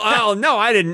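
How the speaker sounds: teasing, sneering, taunting tone. Mimicking the other speaker's denial of a made-up story: imitating Craig denying it. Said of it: "Now you're".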